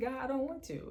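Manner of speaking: high-pitched, tearful, pleading mock crying lament. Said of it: "just crying in that car".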